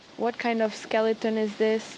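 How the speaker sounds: ordinary talk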